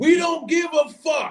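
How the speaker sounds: mock shouting, very loud and very high, screaming. Retelling what a woman at the bar yelled: imitating a woman screaming. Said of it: "she screams. She's like".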